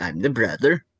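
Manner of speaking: put-on Swedish-sounding accent. Repeating his podcast intro line to his sister, in a Swedish-sounding accent. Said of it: "I sounded Swedish in that, didn't I?".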